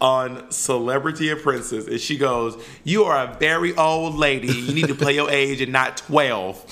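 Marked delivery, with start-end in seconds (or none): 2.8-6.6 put-on, heated, scolding put-down. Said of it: "when she's yelling at [name]".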